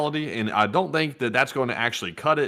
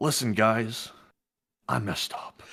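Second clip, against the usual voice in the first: mock online video-creator apology voice; 4 dB quieter than usual. Acting out a pretend YouTube apology to viewers: mock YouTube apology. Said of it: "like a real YouTube apology".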